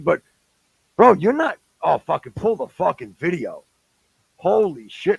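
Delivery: irritated, fed up tone. Arguing with a friend over a claimed distance of five feet, annoyed. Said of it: "I'm annoyed right now".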